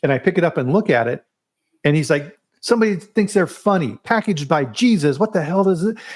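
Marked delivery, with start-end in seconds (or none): 2.6-6.0 yelling, higher. Retelling how the head of marketing started yelling: imitating someone yelling. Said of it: "he starts yelling".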